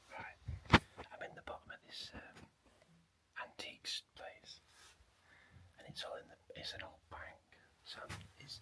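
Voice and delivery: soft, hushed whisper. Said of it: "I'm whispering 'cause it's really quiet".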